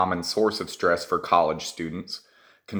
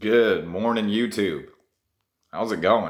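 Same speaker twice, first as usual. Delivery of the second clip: groggy, sleepy, just-woke-up voice. Youtuber greeting viewers at the start of an episode; just-woke-up voice. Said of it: "Can y'all tell I just woke up?".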